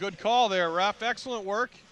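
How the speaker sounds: yelling. Calling a hockey game, shouting to the ref after a call, raised voice. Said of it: "Sorry, I'm raising my voice".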